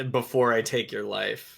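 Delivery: plain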